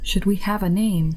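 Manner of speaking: quiet whisper. Playing a character asking a crewmate quietly: whispering. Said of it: "just sort of whisper over to Creed".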